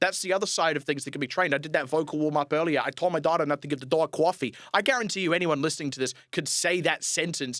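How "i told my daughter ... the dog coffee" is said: slight New York accent. Showing listeners how the mouth can be trained to an accent: slight new york accent. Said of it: "sound a little bit like a New Yorker".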